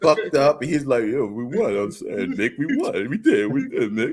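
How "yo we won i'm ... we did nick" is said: mock choked up, swooping, words barely coming out. Recalling the movie scene where Mickey dies, imitating Rocky choked up. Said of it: "he couldn't even get his words out".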